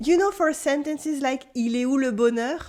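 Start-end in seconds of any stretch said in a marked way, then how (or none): none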